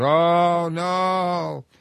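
whole crowd stretching out a drawn-out "oh no". Retelling a debate where the crowd reacted to a speaker: imitating the crowd's "no" sound. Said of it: "a sound coming from the crowd".

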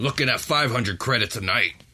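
barbed put-on devil character voice. Voicing a barbed devil answering guests who ask for rooms, barbed devil voice. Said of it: "I know I got to do a barb devil voice".

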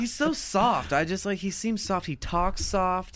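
dainty, delicate voice.

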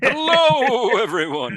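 eerie, ghostly sea-captain voice, very high-pitched. Teasing a co-host about how he opens every episode: imitating Zachary Million's sea-captain ghost voice. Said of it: "like the ghost of a sea captain".

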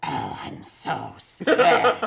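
booming, slow, gravelly, rough dragon voice. Voicing the dragon answering a player's summoned rat: voicing the dragon Isohedros. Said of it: "Isohedros looks up at you and says".

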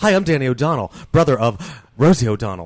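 very loud, booming, set-phrase style delivery. Retelling how a celebrity's brother introduces himself: imitating Danny O'Donnell's introduction. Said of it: "That's exactly how he introduces himself".

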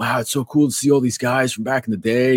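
mellow, easygoing, chilled-out hippie voice. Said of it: "I don't know why he's talking like a hippie".

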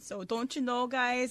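Wisconsin accent. Joking with friends that Trav hates it, slipping into a Wisconsin accent. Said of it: "hates the Wisconsin accent".

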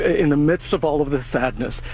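ordinary talk, nothing marked

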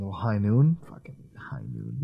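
mocking, sarcastic, sing-song tone. Commenting on another speaker's drink choice: sarcastic. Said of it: "I heard that sarcastic shit in your voice".

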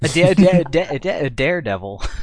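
very slow, halting, swooping cartoon stutter on da-. Teasing another speaker by repeating their stumble: mock stutter on Daredevil. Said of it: "channeling your inner Elmer Fudd".

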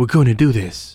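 put-on whisper. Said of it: "Stop whispering".

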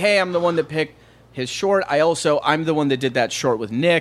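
ordinary talk

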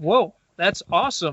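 ordinary delivery

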